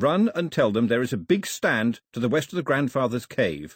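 plain reading voice

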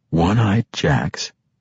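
suspicious, wary, questioning echo. A narrator voices a character repeating a name back, as a suspicious echo. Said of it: "Entreri echoed suspiciously".

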